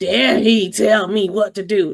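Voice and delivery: fake angry, indignant modern woman voice. Speaker voices a hypothetical woman's reaction: mock-angry modern woman voice. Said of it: "This is my angry modern woman voice".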